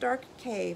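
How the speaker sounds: usual speaking voice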